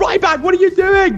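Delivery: put-on screaming sports commentator voice. Retelling how the commentators reacted to the crowd: imitating Michael Cole screaming. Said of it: "screaming at the top of his voice".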